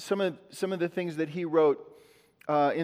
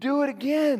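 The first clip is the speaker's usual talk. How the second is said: put-on very high, eerie, creepy little-kid voice; 9 semitones higher, 3 dB louder than usual. Speaker acting out delight like a little child, creepy childlike voice. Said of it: "That sounded creepy".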